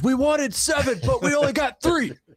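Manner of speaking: mock, very high yelling holler. Talking about the Titans' bellower, imitating a fan yelling from the stands. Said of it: "will he yell out from the stands".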